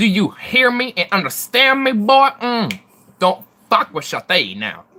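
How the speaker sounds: loud, swooping, aggressive southern sass. Switching into Shathid's voice to address a boy, aggressive. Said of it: "my Shathid's a lot more aggressive".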